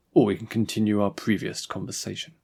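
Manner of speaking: ordinary delivery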